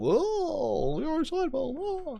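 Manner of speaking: very high, very slow, stretched-out oh. Joking about a game mod, doing a Jerry Seinfeld voice. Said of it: "slide into the Seinfeld".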